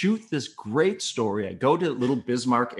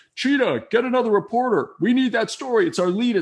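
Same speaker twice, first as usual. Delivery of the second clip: play-acted, very high, shrill, hollered voice; 11 semitones higher, 6 dB louder than usual. Retelling how the news director yelled out for another reporter, imitating Dick yelling. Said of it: "yelled out".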